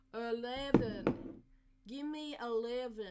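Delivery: loud, put-on, attempted American accent. Trying an American accent while the others judge it, put-on American accent. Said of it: "that's more like it".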